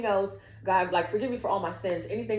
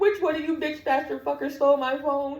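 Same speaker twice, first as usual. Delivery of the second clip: high, mock-tearful, accusing crying outburst; 7 semitones higher, 3 dB louder than usual. Retelling asking the crowd who stole their phone, imitating their own crying outburst. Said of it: "I was crying".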